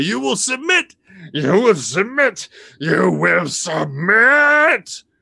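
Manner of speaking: enraged character screaming. Uncle George spins on a teddy bear and screams at it furiously. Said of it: "he just starts screaming at the teddy bear".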